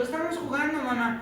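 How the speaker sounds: put-on high, innocent little-boy voice.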